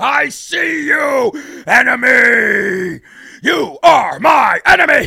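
slow, rough bellow with enemy drawn out. Pretending to be Alex Jones having a meltdown: Alex Jones meltdown impression. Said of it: "pretending I'm Alex Jones over here having a meltdown".

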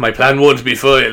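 put-on loud cliché French accent. Retelling a story's plot, voicing one character's reply in a stereotypical French accent. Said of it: "so he's very stereotypical French anyway".

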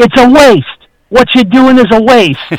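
put-on heavy New York accent, very high pitch. Retelling what a man always said during guitar practice, in thick New York accent. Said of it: "in his thick New York accent".

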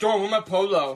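loud voice with a speech impediment. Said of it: "he's got the speech impediment".

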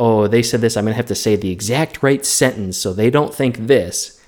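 normal talking voice

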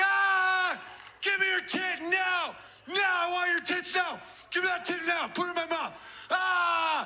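put-on very high, violent, aggressive, demanding baby voice. Acting out a newborn demanding to be fed: imitating a violent, aggressive baby. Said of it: "it's way more violent and aggressive than that".

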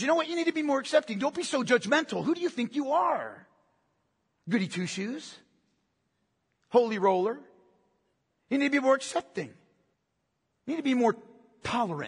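soft, hushed stage whisper. Acting out the enemy of our souls tempting believers: imitating a half-whisper. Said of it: "He whispers".

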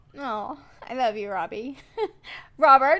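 high, emotional, tearful crying voice. A parent speaks to their eldest son during an interview, crying. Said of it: "I'm crying".

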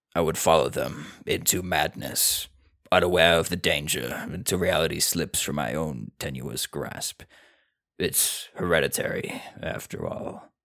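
deep, cosmic-horror storyteller reading voice. Reading a line aloud in the style just announced, a deep, Lovecraftian delivery. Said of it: "read this one in like a deep".

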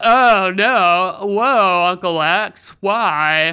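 very slow, dim-witted, dopey drawl, awful-sounding. Mocking an actor's movie performance, doing Jon Cryer's awful dipshit voice. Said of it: "He does this awful fucking voice".

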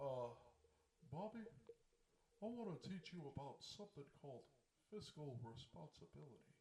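lecturing dad voice, teaching tone. Showing another speaker a Hank Hill impression. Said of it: "my Hank Hill impression".

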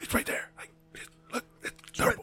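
put-on angry whisper. Retelling how someone whispered in his ear while he scanned, imitating an angry whisper. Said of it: "He's whispering angrily in my ear".

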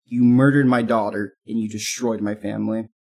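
normal talking voice

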